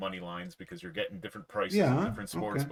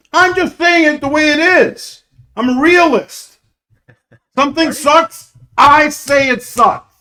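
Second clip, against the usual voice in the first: yelling, much louder and higher; 20 dB louder than usual. A speaker complains about people during an argument, yelling. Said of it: "Why are you yelling?".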